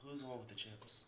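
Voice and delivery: hushed, very quiet half-whisper. Asking the other speaker something off the mic: half-whispering. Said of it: "I'm just gonna whisper this".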